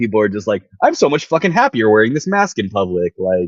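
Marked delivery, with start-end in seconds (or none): none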